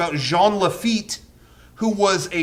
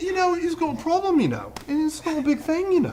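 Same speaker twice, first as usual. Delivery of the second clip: very high, swooping sing-song voice; 9 semitones higher, 4 dB quieter than usual. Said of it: "That's [name]".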